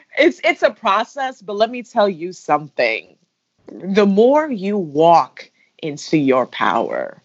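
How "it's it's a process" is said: near tears, full of feeling, pitched up. Telling Jay that it's a process, getting emotional. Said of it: "I'm getting emotional".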